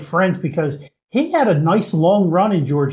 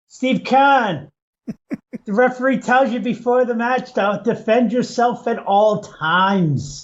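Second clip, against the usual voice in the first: put-on botched New England accent, pitched-up wrestling promo voice, very slow; 5 semitones higher than usual. Quoting what Kevin Sullivan said to Steve Keirn: Kevin Sullivan impression. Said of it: "it sounds more like Schwarzenegger than a New England accent".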